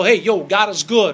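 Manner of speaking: put-on Italian accent, preacher style. Speaker proud of being italian shows how he'd sound as a preacher: italian preacher accent. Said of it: "then you could be like an Italian preacher".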